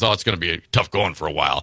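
low, fast, flippant, offhand brush-off.

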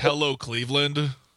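ordinary talk, nothing marked

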